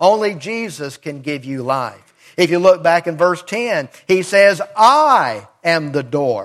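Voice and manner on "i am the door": pronoun I stressed hard at the start. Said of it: "there's emphasis on the pronoun "I."".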